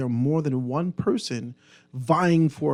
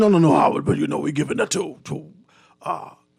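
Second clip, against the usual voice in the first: rough, creaky, swooping put-on voice; 4 dB louder than usual. Retelling what he was told about Fox Hill: John Pinder impression. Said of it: "that's my impression of his voice".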